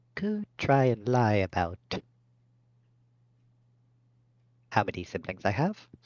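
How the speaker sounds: voice dropped low and kept quiet, hushed. After looking at the guards behind her, the character speaks: lowered voice. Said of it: "Just lowers her voice".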